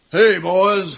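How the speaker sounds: rooster-like cartoon voice. Playing God calling in to the show, greeting the hosts in a Foghorn Leghorn voice. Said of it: "you sound like Foghorn Leghorn".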